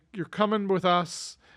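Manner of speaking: ordinary talk, nothing marked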